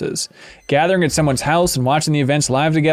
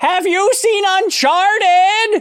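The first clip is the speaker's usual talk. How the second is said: mock very high, slow, drawn-out half-yell. Speaker quotes his wife's grandmother speaking to his father-in-law, imitating grandmother half-yelling. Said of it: "half yelled to my father-in-law".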